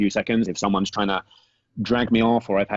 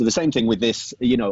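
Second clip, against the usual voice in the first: usual speaking voice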